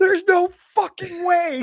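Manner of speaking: very high, loud scream of disbelief. Retelling seeing the bottle she pulled out, re-enacting their own screaming. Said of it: "and I started screaming".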